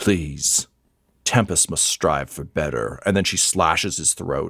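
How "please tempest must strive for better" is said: scornful, disdainful, disgusted, contemptuous delivery. Voicing a character looking down at a dying man: disgusted. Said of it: "looks down at him with disgust".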